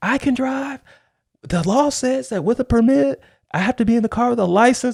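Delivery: mock very high, heated, insisting yell. Retelling arguing back at fifteen about who had to drive, retelling own yelling. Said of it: "and I'm yelling".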